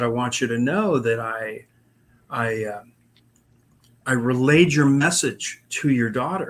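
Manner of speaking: ordinary talk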